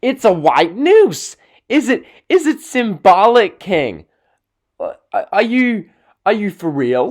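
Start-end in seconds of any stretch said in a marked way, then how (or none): 0.0-4.1 loud ringside commentator shout, play-by-play style. Retelling an Undertaker match at WrestleMania: imitating Michael Cole shouting. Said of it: "And Michael Cole shouting".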